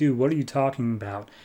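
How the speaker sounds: plain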